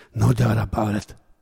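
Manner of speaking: growled, put-on, affected Irish lilt. The village drunk, overheard speaking, growling in an affected irish lilt. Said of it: "growled Gouser, in an affected Irish lilt".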